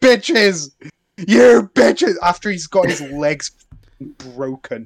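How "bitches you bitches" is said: loud, sudden screamed-out outburst. A speaker recalls a character screaming after his legs were broken, retelling a scream. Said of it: "he just screams".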